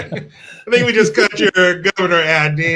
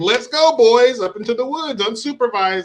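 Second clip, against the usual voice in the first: overeager, eager, pitched-up rallying tone; 5 semitones higher than usual. Acting out a parent whose van is already packed: imitating an overeager dad. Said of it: "whose van is already packed".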